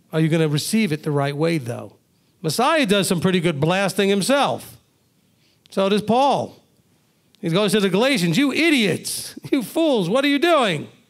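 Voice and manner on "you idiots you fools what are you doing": mock fierce, angry, pitched-up scolding. Quoting Paul writing to the Galatians, retelling Paul's angry rebuke. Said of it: "he was angry".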